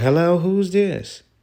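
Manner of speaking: play-acted, very high, chirpy and cheerful. Speaker acts out a woman answering when she called him back, imitating a cheerful voice. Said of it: "a cheerful voice".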